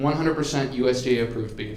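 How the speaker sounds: ordinary talk, nothing marked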